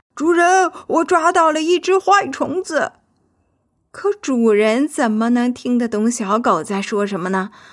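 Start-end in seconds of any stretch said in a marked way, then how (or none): 0.2-3.0 loud, high-pitched yell. Narrator reads the little dog calling to the garden owner, shouting. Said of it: "小狗立刻朝他大喊".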